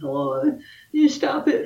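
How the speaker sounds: put-on very high little-kid voice. Retelling what was heard on an old tape: imitating a ten-year-old kid. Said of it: "talking like a ten-year-old kid".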